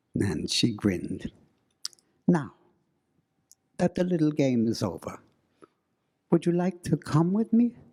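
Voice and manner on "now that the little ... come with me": put-on odd Middle European accent, higher. Retelling what a grinning woman said to the couple: strange Middle European accent. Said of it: "She had this strange Middle European accent".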